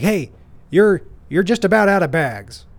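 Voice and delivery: put-on accusatory tone. Retelling a man barking at a young woman working at a restaurant, with put-on aggression. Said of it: "he said it with this tone of aggression".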